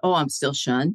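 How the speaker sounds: ordinary delivery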